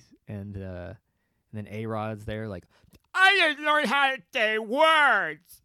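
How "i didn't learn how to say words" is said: loud, high, marble-mouthed mumble, words stretched out. Mocking another retired player on a TV panel: A-Rod impression, mouth full of marbles. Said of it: "sounds like he's eating marbles when he talks".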